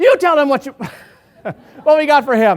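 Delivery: very loud, high-pitched shout. Retelling answering a man across the street from the car, retelling a shout back. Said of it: "I shouted back".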